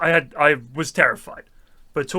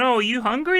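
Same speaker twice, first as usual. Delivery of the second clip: put-on high elderly Italian grandmother voice; 9 semitones higher than usual. Retelling a visit for cookies, imitating Missus Galati. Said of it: "she'd be going".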